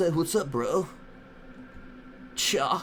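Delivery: put-on dude-bro voice. Showing the different voices they do, as Rick Rock: Rick Rock dude-bro voice. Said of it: "He has a dude bro voice. ... as Rick Rock, you know, he, he sounds like this".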